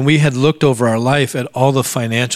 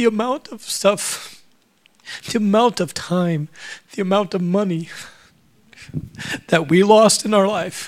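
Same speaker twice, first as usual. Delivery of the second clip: choked-up, emotional voice lifting higher; 6 semitones higher, 4 dB quieter than usual. Telling listeners about closing on their house this friday: getting emotional. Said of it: "sorry, I get emotional".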